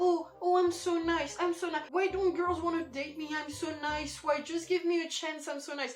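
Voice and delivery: whiny, self-pitying nice-guy whine. Critiquing a part that sounds self-pitying, mock self-pitying whine. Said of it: "It just sounds like you're, ... sounds kind of self-pitying".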